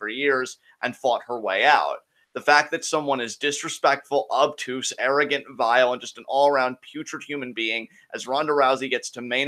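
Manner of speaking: ordinary talk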